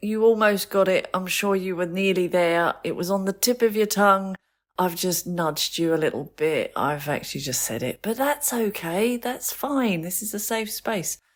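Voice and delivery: comforting, reassuring, gentle teacher-like voice. Demonstrating how to tell someone the answer when they are stuck, reassuring voice. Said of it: "with a reassuring".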